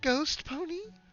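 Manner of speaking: very high cartoon voice. Fluttershy responds to a patrol report, doing a Shaggy impression. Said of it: "doing her best impression of Shaggy".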